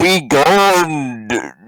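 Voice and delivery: thunderous, booming, high scream, drawn out. Voicing a game figure when asked to imitate it, thunderous scream. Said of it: "a thunderous voice scream".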